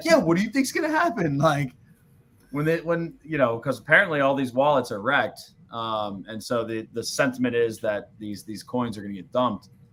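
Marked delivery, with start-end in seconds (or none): 0.0-1.4 put-on eager, very high-pitched, fast, bubbling delivery. Retelling a question asked in an earlier space: imitating Richard sounding excited.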